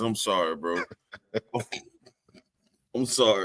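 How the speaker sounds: talking through laughter. Opening a segment, still laughing about the story: laughing while talking. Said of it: "I'm still laughing about this".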